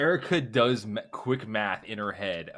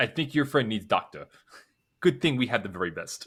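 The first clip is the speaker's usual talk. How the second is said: put-on Russian accent, broken English. Retelling a scene, quoting the Russian's comment in a put-on Russian accent. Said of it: "that was a splendid Russian accent".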